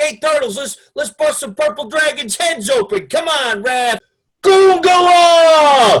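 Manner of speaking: put-on very loud, high New York accent. Describing a Ninja Turtles character, quoting him in a heavy stereotypical New York accent. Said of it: "really heavily stereotypical New York".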